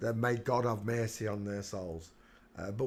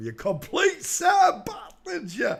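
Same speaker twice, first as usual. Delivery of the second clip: shrill, very high, booming, swooping jeer; 10 dB louder than usual. Sean Bean's name has come up, so do a Sean Bean impression for a laugh. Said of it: "That impression of uh, Sean Bean".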